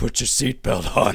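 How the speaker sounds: mock-calm, very calm delivery. Recapping a movie scene, the speaker quotes her line to him, very calmly. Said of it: "she just tells him very calmly".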